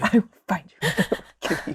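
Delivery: put-on monotone movie voice. Repeating the film line another speaker just quoted: Liam Neeson impression. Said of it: "that is so monotone".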